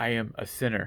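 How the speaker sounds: ordinary talk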